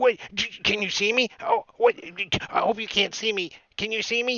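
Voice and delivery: little voice. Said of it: "it's like a small voice".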